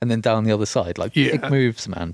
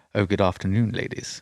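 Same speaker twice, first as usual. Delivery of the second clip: acted smooth, suave tone; 3 semitones lower, 4 dB quieter than usual. Discussing why Roger Moore works as Bond, the speaker does a suave Roger Moore impression. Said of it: "that sort of suave".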